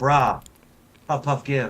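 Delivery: slow, drawn-out, unhurried on every word. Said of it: "break out the [name] on 'em".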